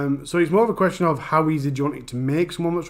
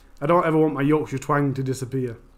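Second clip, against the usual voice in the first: usual speaking voice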